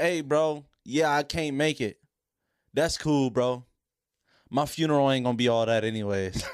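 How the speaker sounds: ordinary talk, nothing marked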